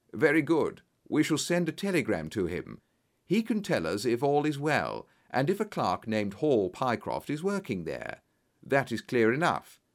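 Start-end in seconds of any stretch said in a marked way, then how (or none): none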